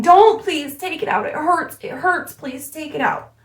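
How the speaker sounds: put-on pained pleading, high and rushed. Retelling what a woman screamed as a needle went into her navel: retelling a pained pleading scream. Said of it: "So she is screaming".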